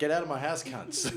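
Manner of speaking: put-on brash, fearless, ballsy tone. Imitating a friend's bold reply to monsters in a dream: imitating a ballsy tone. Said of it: "I like how you're more ballsy at it".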